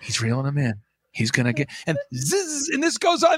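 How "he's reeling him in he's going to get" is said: hushed, stage half-whisper, running commentary style. Retelling how the second fishing commentator talks: imitating a half-whispering commentator. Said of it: "then the other guy kinda whispers".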